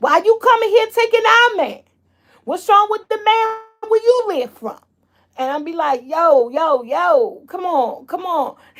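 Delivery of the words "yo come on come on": put-on very slow New York accent, long drawn-out "yo". Retelling answering people who ask why they come taking their man; new york accent. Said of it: "Gotta do New York accent".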